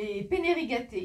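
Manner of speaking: loud, over-the-top, exaggerated put-on Italian accent. Reviewing grocery buys, the speaker says the pasta name in an Italian accent. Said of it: "avec mon accent italien".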